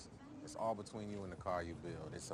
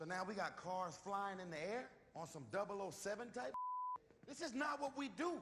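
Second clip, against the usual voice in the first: very high, overwrought, overly emotional, pitch climbing; 14 semitones higher than usual. Delivering a line that a listener then says is too emotional, overly emotional. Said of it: "you really gotta check that emotion".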